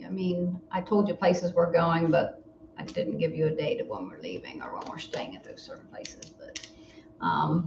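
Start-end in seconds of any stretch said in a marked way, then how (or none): 0.0-6.3 low, breathy near-whisper. Telling another speaker about upcoming trips, talking low. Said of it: "Why are you talking so low?".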